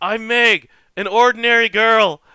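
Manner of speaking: booming, very loud, forceful, high voice. Describing a game character's party entrance to a friend, in a loud, forceful Meg impression. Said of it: "says in a very loud, forceful voice".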